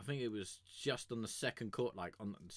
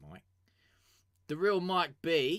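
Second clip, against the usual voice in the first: loud, high Australian accent, belted out; 6 semitones higher, 11 dB louder than usual. Announcing the next artist's name, in an Australian accent. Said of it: "I like saying your name in an Australian accent".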